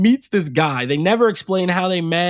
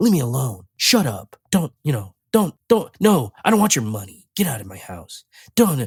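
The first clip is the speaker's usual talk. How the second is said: mock bland, low, barely-bothered dismissal; 6 semitones lower than usual. Criticizing an actress's performance, the speaker imitates her flat monotone delivery. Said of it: "she doesn't have any inflection in her voice".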